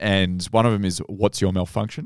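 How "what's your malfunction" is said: ordinary talk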